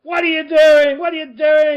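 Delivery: mock shouting. Describing dads on the sideline, the speaker acts one out, imitating a dad shouting. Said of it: "he'd be disappointed and sad".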